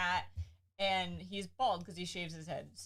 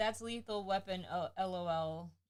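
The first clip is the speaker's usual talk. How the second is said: ordinary talk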